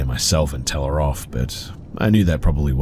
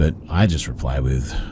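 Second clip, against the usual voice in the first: ordinary talk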